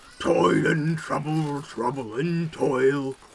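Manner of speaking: deep, throaty, guttural ogre voice. Narrating the story, the speaker voices the approaching ogre in a deep guttural voice. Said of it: "it's a deep guttural voice".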